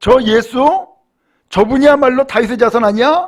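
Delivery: amazed crowd exclaiming together. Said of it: "하면서 다 놀래버린 거예요".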